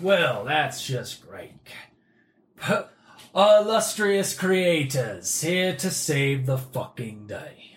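mocking, sardonic, dry sarcastic in-character jab. Player in character greeting the arriving casters, sarcastic in-character jab. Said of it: "I see that you're made into a sarcasm golem".

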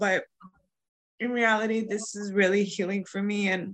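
tearful voice, crying while talking. Thanking a guest at the end of the talk, crying while talking. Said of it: "I know I'm crying right now".

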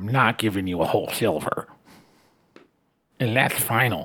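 soft, sneaky, unbudging goblin voice, firm tone. A player in a tabletop game speaks as a goblin character, in goblin voice. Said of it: "I'm a goblin. / And she'll rub one of her eyes in an almost childlike gesture".

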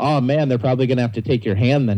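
plain

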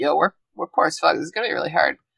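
hushed, secretive whisper. Retelling a book scene where George brings up money: whispering as George. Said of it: "whispering it on the Quidditch pitch".

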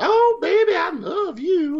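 very high, pitched way up, southern diner waitress voice. Describing a diner scene where Rip walks in, imitating a southern waitress. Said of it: "the southern waitress is like".

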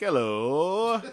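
shrill, booming, very high, loud, drawn-out fake hello. Asked how they'd answer the boss's call, speaker shows a weird fake voice. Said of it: "like a weird voice. It's not my voice".

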